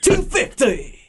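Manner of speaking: high British darts-announcer style calling voice. Repeating the call when asked again: imitating a British darts announcer. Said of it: "Is that your Brit?".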